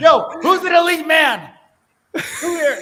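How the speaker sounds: loud, high, pumped-up motivational hype yell. Doing an impression of Andy Elliott's speech after being asked to show it: imitating Andy Elliott yelling. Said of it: "let's see the impression".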